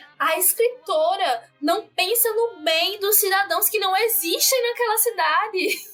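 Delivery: slow, drawn-out, high, ironic, sarcastic mock voicing.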